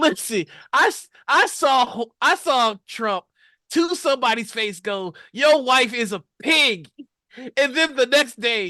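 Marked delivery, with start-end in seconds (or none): 5.3-6.9 full-chested, fully committed, forceful delivery. Retelling an insult said to someone's face: imitating Trump saying it with his whole chest. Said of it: "He said it with his whole chest".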